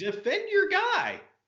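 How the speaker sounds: high-pitched, slow, heated insistence.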